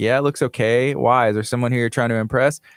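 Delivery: ordinary talk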